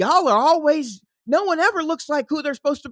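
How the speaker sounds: mock worked-up, upset, high shout. Retelling how someone on Threads answered a post: imitating someone yelling. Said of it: "someone came in and yelled".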